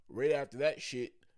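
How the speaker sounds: ordinary delivery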